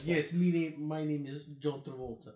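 put-on Russian accent impression. You mock an actor's accent throughout a whole movie: John Travolta as a Russian dude. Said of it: "plays the whole fucking movie as a Russian dude".

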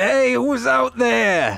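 shrill, very high-pitched, loud acted scream. Calling out down a dark corridor in a game scene: screaming in character. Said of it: "I scream".

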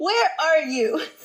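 demanding, angry screaming tone, held back. Retelling a phone call where she screamed at the speaker, acting out her screaming. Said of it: "she started screaming at me".

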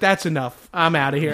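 plain

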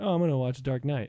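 ordinary talk

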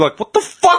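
mock incredulity. A speaker retells a hurt player's reaction to the ref supervisor, mock-incredulous.

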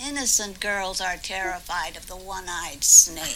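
low, witchy voice. Retelling what Grandma said to the giggling girls, in a witch voice. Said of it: "She says it like a witch".

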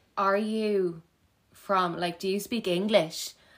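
put-on aggressive, demanding tone. Retelling a deli customer's question to a sixteen-year-old: imitating an aggressive customer. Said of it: "getting really aggressive".

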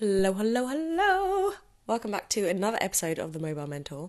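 hoarse, just-woken voice. Host opens an episode of The Mobile Mentor just after waking, croaky just-woken voice. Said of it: "Excuse my croaky McCrokison voice, just woken up".

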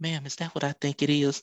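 put-on whisper. Retelling what a security guard said to his mom after checking her purse: retelling a whisper. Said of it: "he whispered".

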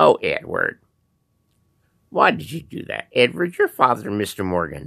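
prim, chiding church lady voice. The speaker imitates his mother addressing him, in a Church Lady voice. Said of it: "mother was a little bit like the Church Lady".

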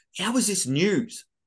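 put-on yelling. Retelling yelling out during a news report: imitating own yelling. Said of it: "I'll yell out through the middle of a report".

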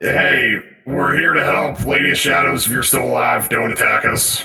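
voice-modified speech. Before entering, calling out to the Lady of Shadows, voice-modified call-out. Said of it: "if I can get my voice mod to work".

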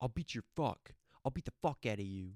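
fast, rattled-off, angry, pissed-off delivery. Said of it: "He gets so pissed off".

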